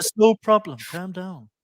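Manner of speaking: calm, placating voice. Imitating Charlie staying calm in the last twenty minutes: soothing tones. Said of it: "those soothing tones he has".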